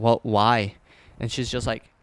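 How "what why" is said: ordinary talk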